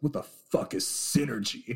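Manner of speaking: deliberately poor, very bad TV-drama character voice. Imagining a character slumped over his desk: very bad Don Draper voice. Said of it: "That was a very bad Don Draper voice".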